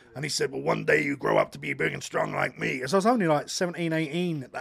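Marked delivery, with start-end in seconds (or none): 0.5-2.8 rough, creaky, roughened-up pro-wrestler promo voice. Retelling how the wrestler talked in person: Randy Savage voice. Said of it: "that's his voice".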